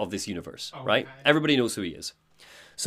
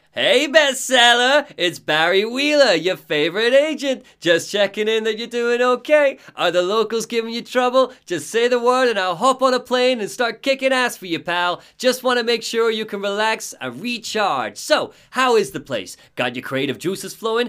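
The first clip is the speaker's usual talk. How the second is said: put-on heavy, high-pitched New York accent; 10 semitones higher, 3 dB louder than usual. Doing the agent Barry Wheeler's intro, Barry Wheeler New York accent. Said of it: "to hear the New York accent".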